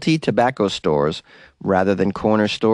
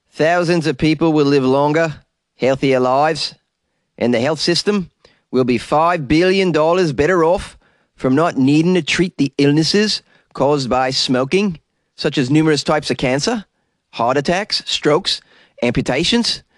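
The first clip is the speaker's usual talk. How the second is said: terrible fake New Zealand accent, pitched up; 5 semitones higher than usual. Reading a health minister's quote aloud from an article, in a bad New Zealand accent. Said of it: "This is the worst New Zealand accent ever".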